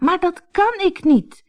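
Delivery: high-pitched, cried-out protest. A girl replies to the woman who sternly scolded her, crying out. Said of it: "riep Anneke".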